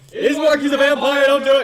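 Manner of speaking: very high, very loud, alarmed shout. Warning Ismark in character from a distance: yelling a warning. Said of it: "Is that what you're yelling?".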